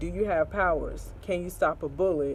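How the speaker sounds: usual speaking voice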